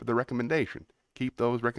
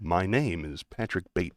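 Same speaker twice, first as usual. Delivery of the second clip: put-on, overly controlled, try-hard regular-guy voice; 5 semitones lower than usual. Doing an American Psycho voice for the speaker: Patrick Bateman voice. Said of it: "this is my American Psycho voice".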